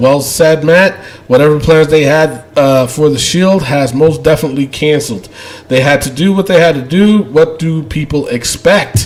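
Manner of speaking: plain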